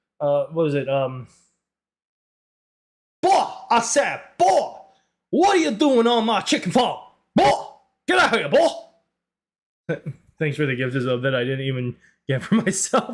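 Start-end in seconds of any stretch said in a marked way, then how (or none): 3.2-8.7 high, Southern-accented cartoon rooster voice. Trying to sound country, the speaker does a Foghorn Leghorn voice. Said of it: "That's more like foghorn leghorn".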